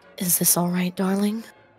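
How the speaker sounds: intimate, soft whisper, very close. Voicing a character leaning into a player's ear: whispering in ear. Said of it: "he leans into your ear and whispers".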